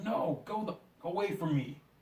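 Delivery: mock angry, high, hostile dismissive snap. Retelling a movie scene where a man snaps at a kid: imitating someone snapping angrily. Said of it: "the guy just snaps him like".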